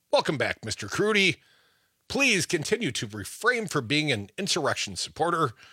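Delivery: ordinary talk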